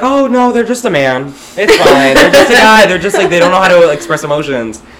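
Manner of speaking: high, loud, mock-excusing voice.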